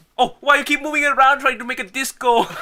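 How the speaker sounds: shrill, very high, very loud scolding tone.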